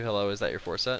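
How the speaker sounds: plain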